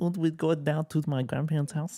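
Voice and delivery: put-on German accent. Discussing a character with friends, the speaker quotes her with a slight German accent. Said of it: "she's has a little German accent".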